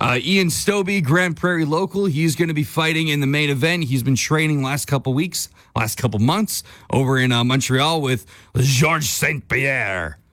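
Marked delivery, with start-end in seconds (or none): 8.5-10.1 very bad fake French accent. Naming who the local fighter trained with: very bad French-sounding accent. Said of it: "my impression at a very bad French-sounding accent".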